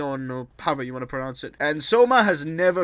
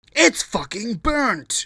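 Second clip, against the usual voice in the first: pitched-up, ranting celebrity TV chef voice; 6 semitones higher than usual. Doing a bit as Gordon Ramsay about burnt food: Gordon Ramsay impression. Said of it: "I am Gordon Ramsay".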